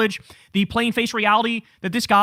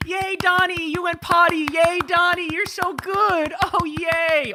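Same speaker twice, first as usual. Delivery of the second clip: acted, slow, drawn-out, high-pitched cheering; 8 semitones higher than usual. Mocking the loyalists cheering for him: mock cheering a little boy. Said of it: "they cheer for him like, like he's a little boy".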